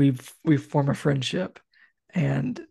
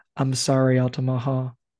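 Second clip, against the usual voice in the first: put-on saddest voice, slower. Speaker planning what to say before shooting, in a mock-sad voice. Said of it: "I'm gonna say in the saddest voice".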